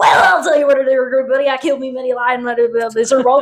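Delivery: put-on heavy, thick, extreme Texas accent, laid on thick. Recapping an episode, the speaker quotes Mike's reply in Mike's extreme Texas accent. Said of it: "Mike in extreme Texas mode says".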